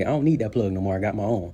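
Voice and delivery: normal talking voice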